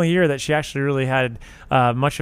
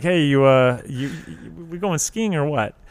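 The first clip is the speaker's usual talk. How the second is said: halting, stop-start, stumbling over the first words. Acting out Ted Danson walking into the sitcom scene: Ted Danson impression. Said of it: "Ted Danson walks in. He's like".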